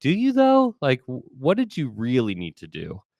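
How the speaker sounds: sharply high, skeptical, incredulous voice. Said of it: "You're like".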